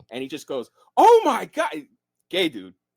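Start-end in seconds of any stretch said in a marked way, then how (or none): 0.9-1.7 mock exaggerated fright, higher and louder. Retelling a stranger's reaction at a bathroom door: imitating an over-the-top startled reaction. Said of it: "so over the fucking top".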